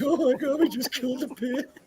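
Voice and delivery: crying out in a very high voice. Retelling how one reacted as a child: imitating own past crying. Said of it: "I just start crying".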